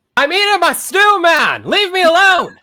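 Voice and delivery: shrill, very loud, high full-volume shout. Answering a farmer's question while eating stew: yelling. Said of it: "too small to be yelling like that".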